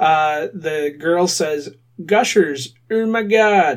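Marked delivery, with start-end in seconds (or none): 2.0-3.8 bored, completely unenthused delivery. Speaker reenacts the girl's line from a candy commercial, mock flat with no enthusiasm. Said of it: "with no enthusiasm whatsoever".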